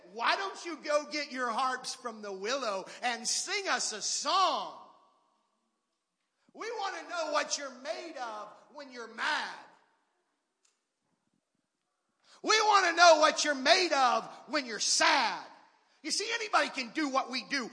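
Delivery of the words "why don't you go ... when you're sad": mock, sly, sarcastic, tongue-in-cheek goading tone. Acting out the taunt from the scripture passage: imitating sarcastic taunting. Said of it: "tongue in cheek, sarcastically".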